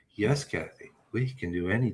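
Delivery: careful, restrained, gentle delivery, soft and hushed. Not wanting to get recorded shouting, he answers Kathy softly, not shouting. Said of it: "I have to say it softly, like I'm not shouting".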